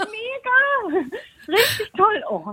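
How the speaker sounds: thrilled, very high, very slow and drawn out. Caller on the phone just learned they got through and won, very excited. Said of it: "ich bin ganz aufgeregt".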